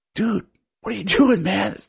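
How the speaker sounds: hushed whisper. Game master voicing another voice that interrupts a player's character, whisper. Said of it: "you hear another voice whisper".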